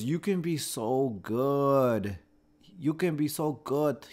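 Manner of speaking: put-on Brazilian accent. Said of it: "he was Brazilian, so he had an accent".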